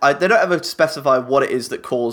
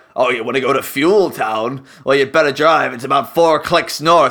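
put-on, pirate-sounding raider talk; 4 dB louder than usual. Imagining a Mad Max raider giving directions: pirate-like voice. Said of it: "I don't know why he sounds like a pirate".

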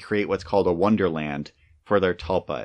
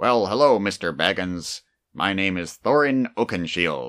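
silly dwarf character voice. Recalling the dwarves in an earlier version, the speaker does the main dwarf: goofy Thorin Oakenshield voice. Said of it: "had this voice that was sort of like".

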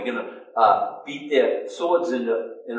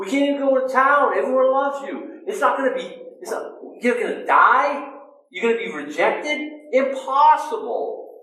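very high-pitched, objecting, protesting voice; 13 semitones higher than usual. Retelling Peter's reaction to Jesus: imitating Peter protesting. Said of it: "because of what Peter says".

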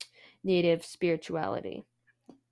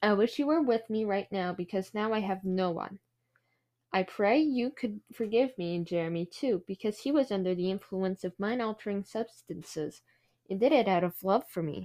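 usual speaking voice

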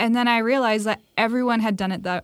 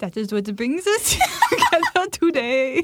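loose, half-hearted, high, swooping French accent; 6 semitones higher than usual. Podcast co-host opening an episode about marriage, in a sort-of french accent. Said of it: "That was kind of a French accent".

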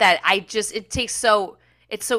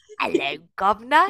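fake British accent, tried on. Greeting British listeners while working on accents, in a fake British accent. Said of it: "I'm just working on my accents".

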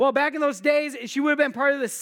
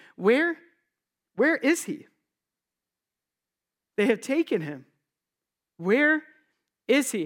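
mock anguished, desperate voice, weeping through tears. Speaker voices the weeping woman at the tomb speaking to angels: acting out desperation. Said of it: "sense the desperation in her voice".

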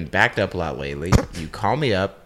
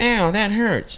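slow, high-pitched mockery. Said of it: "You mocked me and said".

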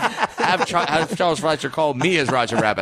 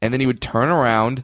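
plain

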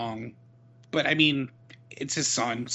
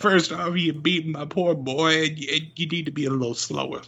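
high, mock weepy promo announcer voice. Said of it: "If he's like".

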